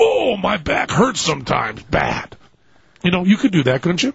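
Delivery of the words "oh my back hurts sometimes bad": slow, drawn-out cartoon voice with swinging, swooping pitch. Acting out his own line from an attack ad, in a Yosemite Sam voice. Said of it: "Sort of Yosemite Sam with a backache".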